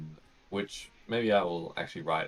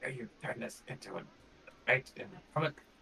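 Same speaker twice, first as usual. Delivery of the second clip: muttered under the breath, much higher-pitched; 6 semitones higher, 7 dB quieter than usual. Retelling a character's remark during a procession, muttered under her breath. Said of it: "Bodney under her breath is like".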